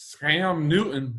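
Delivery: put-on Southern American accent, conversational. Chatting about scams, doing a quick bit: put-on Southern accent. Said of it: "I gotta get my good like Southern accent for a second".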